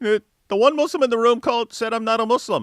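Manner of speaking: high, loud, whining, complaining voice. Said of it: "that's what you're whining about?".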